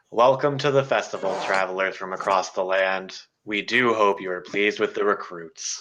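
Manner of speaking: bored, uninterested voice, sighing and trailing off at end. Game master voicing a voice from the podium above, uninterested voice. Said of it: "a seemingly uninterested voice echoes".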